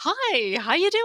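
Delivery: sunny, friendly, very high phone voice. Recalling being in trouble when mom answered her sister's call: imitating mom's happy, friendly phone voice. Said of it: "It's like happy, friendly".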